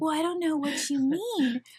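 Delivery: put-on small, high, meek, timid little-girl voice. Retelling a woman's recorded call in a little meek voice. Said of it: "this little meek girl".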